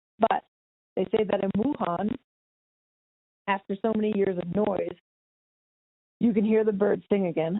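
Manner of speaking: teary, tearful, tears welling up. Reading aloud a piece entitled Lockdown, getting teary. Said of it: "I feel like I'm getting teary during this".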